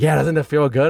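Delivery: plain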